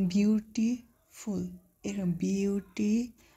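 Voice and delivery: slow, syllable-by-syllable "beautiful".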